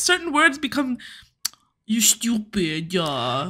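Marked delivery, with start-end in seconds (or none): 1.8-3.5 put-on baby talk, mobster style. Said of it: "it sounds like he does baby talk".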